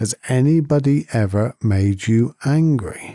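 slow, deliberate, drawn-out, measured delivery. Retelling a teacher asking the same question a third time, slowed down. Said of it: "he slows down and he says".

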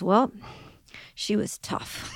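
whispered, slow, breathy put-on New Jersey accent. Quoting a friend's reply at lunch, imitating a friend's New Jersey accent. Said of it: "she says it with that New Jersey accent".

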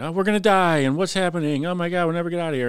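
high, frantic, panicked doomsday wailing. Retelling bar workers panicking about a fire: imitating people screaming in panic. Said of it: "they all start screaming and yelling".

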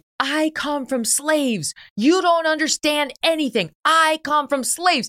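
high-pitched yell. Retelling a student yelling at a professor: imitating a student yelling. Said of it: "one of the students was yelling at him".

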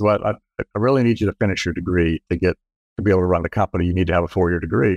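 ordinary delivery

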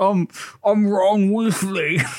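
put-on boy talking with full mouth. Retelling Ron answering Hermione while eating chocolate: imitating Ron with mouth full. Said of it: "chokes through a mouthful of chocolate".

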